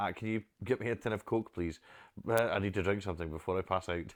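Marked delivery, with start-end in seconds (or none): none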